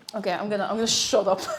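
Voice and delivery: ordinary delivery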